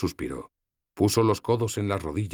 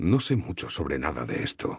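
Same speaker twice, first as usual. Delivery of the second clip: quiet, much lower pitch; 4 semitones lower than usual. Runian answers a woman's question, speaking quietly. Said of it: "respondí en voz baja".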